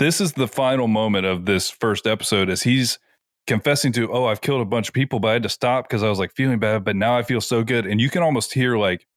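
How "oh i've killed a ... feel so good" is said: plain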